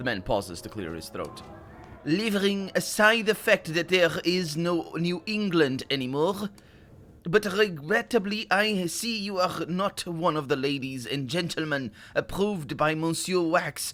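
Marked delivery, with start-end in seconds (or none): 2.0-13.9 concentrated fake French accent, pitched up. Reading a passage aloud while focusing hard on a put-on French accent. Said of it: "I'm gonna really, really focus on making a French accent".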